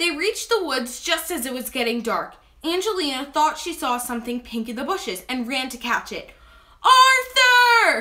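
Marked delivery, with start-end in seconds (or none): 6.8-8.0 very high, very loud shouting cry. Angelina calls after Arthur as she runs into the bushes, shouting. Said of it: "she shouted".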